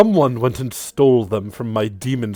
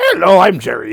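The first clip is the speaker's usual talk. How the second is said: skeleton voice, high, loud and pitched up; 6 semitones higher, 7 dB louder than usual. Voicing a skeleton that pops out of a robe to say hello: Jerry skeleton voice. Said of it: "the skeleton pops out and goes".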